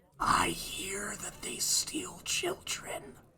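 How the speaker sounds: put-on hushed, boozy, drunk, whispered stage whisper. Galen leans in real close to the others and says it in a stage whisper. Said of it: "lean in real close and stage whisper".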